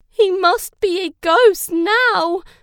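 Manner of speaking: many voices crying out together, very loud, drawn-out. In a story, the whole group speaks at once, crying out. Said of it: "everyone cried".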